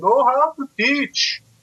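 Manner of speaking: put-on heavy Brazilian accent pitched very high. Retelling the encouragement Marcus Suarez gave him early on, in Marcus Suarez's thick Brazilian accent. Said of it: "in this thick uh, Brazilian accent".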